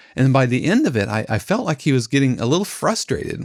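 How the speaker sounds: ordinary delivery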